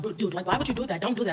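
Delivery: mock heated angry outburst, loud. Retelling going off at a guy: imitating her own angry outburst. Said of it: "I was pissed. I went off".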